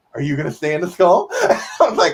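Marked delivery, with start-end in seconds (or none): 0.2-1.3 mock happy, eager, quick, gleeful tone. Recalling a moment in a d and d game, imitating how he sounded happy. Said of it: "sounded happy".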